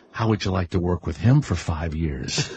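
low, hushed half-whispered voice. Recounting what somebody half-whispered in the room, retelling someone's half-whisper. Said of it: "I hear somebody say a whisper".

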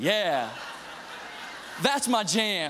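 slow street swagger, very drawn out.

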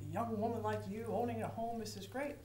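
usual speaking voice

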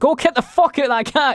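very high-pitched, shrill, furious, angry yelling. Retelling how you shouted at the kids about a cat, reenact the shout. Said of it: "I literally was shouting at them".

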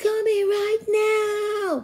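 loud, high yell with "now" drawn out. Narrator voicing a character's line in a story, yelling. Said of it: "yelled Donovan".

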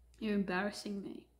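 put-on muttering under the breath. Retelling what a father said on arriving: imitating someone muttering under breath. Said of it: "says under his breath as he smiles".

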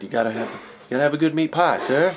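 bad fake New Zealand accent. Retelling a sporting goods store clerk's advice, bad New Zealand accent. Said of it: "I can't get the New Zealand thing down".

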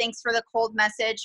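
ordinary delivery

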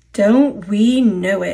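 slow, drawn-out groaning voices in unison. Several engines answering another engine, groaned. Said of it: "they groaned".

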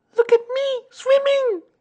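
very high, loud tiny-creature squeak. Reading a story, a character calls from the middle of his pool: squeaked. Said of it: "squeaked Roo".

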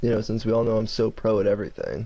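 major, heavy, dripping sarcasm. Gamer fixing a headset knocked off by a sneeze, heavily sarcastic. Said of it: "that was major sarcasm".

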